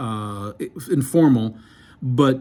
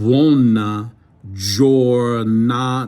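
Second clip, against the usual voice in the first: slow, deliberate pronunciation. Teaching Italian phrases so listeners hear the sounds, speaking slowly on purpose. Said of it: "I'm saying it slow very purposefully".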